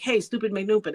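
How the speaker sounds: ordinary talk, nothing marked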